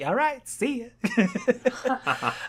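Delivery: small, sweet, cutesy, high little voice. Retelling a scene from a show's episode, in a cute little voice. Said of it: "And like this cute little voice".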